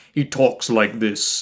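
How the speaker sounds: ominous, doom-laden, deep, slow, foreboding voice. Describing how a show character talks, the speaker demonstrates: deep foreboding Silas Sinister voice. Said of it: "it's very deep and foreboding".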